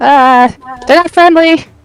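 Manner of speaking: shouted, high-pitched call. Voicing a character who yells back to others: yelling back. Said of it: "I'm gonna yell back and be like".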